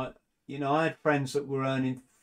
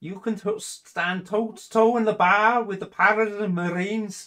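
put-on Scouse accent, higher, louder, slower; 7 semitones higher, 6 dB louder than usual. Quoting a line from a funny RAF video: Scouse accent. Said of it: "this is Scouse accent, isn't it?".

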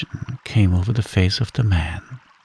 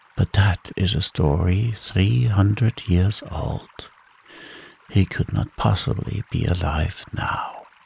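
ordinary delivery

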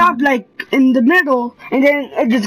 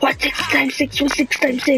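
put-on whisper, quieter; 4 dB quieter than usual. Retelling what a sister keeps asking: imitating a whisper. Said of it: "she's whispering at me".

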